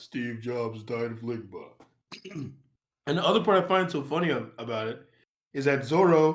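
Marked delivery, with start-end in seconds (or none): 0.0-1.6 deep, hushed, otherworldly godlike voice. Quoting a line you find so funny because of his voice, in a deep, otherworldly, godly voice. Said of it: "the cadence of his voice, like how deep it sounds".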